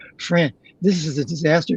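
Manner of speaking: plain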